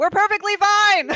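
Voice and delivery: piercing, shrill, very loud and very high scream. Voicing a character who opens the door for people outside: screaming in character. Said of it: "she's gonna scream".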